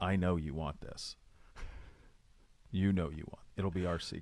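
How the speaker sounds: very quiet, hushed coaxing whisper, barely audible. Retelling coaxing a kid into a bite of brownie: retelling a whisper. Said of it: "I whisper to him".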